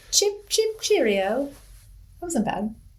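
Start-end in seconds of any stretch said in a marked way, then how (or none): 0.1-1.4 put-on high-pitched British accent. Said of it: "I can actually do a good British accent".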